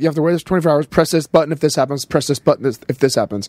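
ordinary talk

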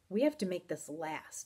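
plain

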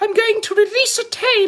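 mock impression, said high. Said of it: "really great Ralph impression".

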